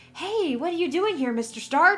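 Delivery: put-on very high-pitched American accent. Show how Tom Holland sounds when he does an American voice: Tom Holland's high American voice. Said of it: "his voice goes up like three octaves".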